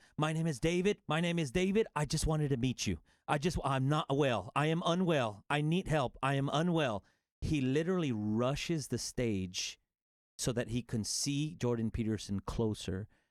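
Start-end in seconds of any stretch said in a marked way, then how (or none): 0.2-7.0 anguished, begging, desperate pleading cry. Retelling a young man rushing the stage, imitating David's desperate shouting cry. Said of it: "shouting with this desperate cry".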